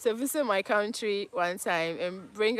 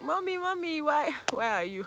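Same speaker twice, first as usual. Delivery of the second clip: high, frightened wail, "why" stretched long and drawn-out; 7 semitones higher than usual. Speaker recalls a scary canopy walk, retelling own scream for mommy. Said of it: "I was screaming".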